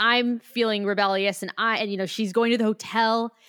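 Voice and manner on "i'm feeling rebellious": ordinary talk, nothing marked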